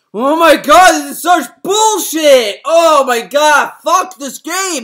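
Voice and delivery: furious, fed-up, raging, very loud and high. Retelling how a streamer kept dying in a game, imitating a furious streamer. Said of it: "he got so fucking mad".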